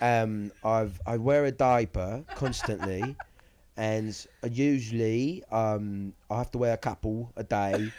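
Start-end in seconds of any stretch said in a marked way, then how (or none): 1.1-7.9 fake British accent, louder. Joking that anything sounds smart: put-on English accent. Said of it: "the English accent".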